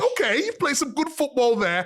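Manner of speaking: bellowing, shouting at full volume. Retelling what was shouted at the players from the sideline: imitating screaming from the sideline. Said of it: "So I'm screaming on the sideline".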